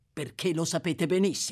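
ordinary delivery

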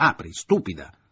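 furious bellowing shout, very loud. A man pounds his fists on a locked door, furious shout. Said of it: "gridò al fine al colmo della rabbia".

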